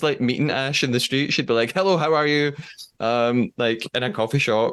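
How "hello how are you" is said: unnecessarily assertive, firm tone, pitched up. Imagining someone greeting you in the street: imitating someone very assertive. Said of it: "says everything really assertively".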